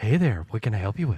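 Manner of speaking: very low, seductive superhero voice, pitch dropped way down. Performer taking his turn in a group bit: sexy Batman voice. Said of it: "I'm gonna do the sexy Batman".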